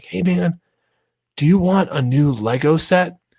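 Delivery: put-on whispering voice. Acting out asking a five-year-old about a Lego set, imitating own whisper. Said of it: "I whisper to him".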